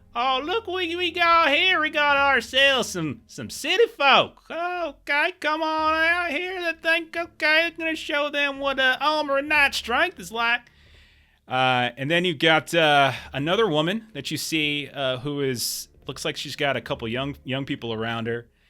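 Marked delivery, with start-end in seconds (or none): 0.2-10.7 loud mocking jeer, much higher and louder. Narrating a scene to players, voicing a man taunting them, loud mocking taunt. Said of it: "He says it loud enough for you all to hear".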